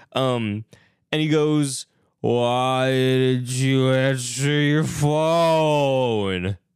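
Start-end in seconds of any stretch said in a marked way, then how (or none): 2.2-6.5 put-on, heavily slurred speech. Retelling a movie scene where a character slurs: imitating slurred speech. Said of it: "he's slurring his words so hard".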